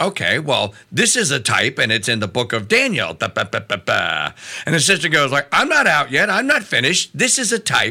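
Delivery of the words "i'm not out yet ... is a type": put-on full, high valley girl voice. Retelling what a sister said on a show, in a valley girl voice. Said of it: "sister doesn't talk like a valley girl".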